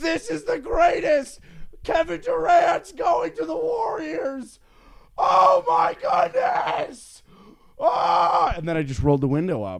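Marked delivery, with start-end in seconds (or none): 0.0-8.5 elated, very high, very slow, drawn-out joyful scream. Retelling hearing big sports news in a car: retelling a scream. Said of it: "I just screamed to anyone who could hear me".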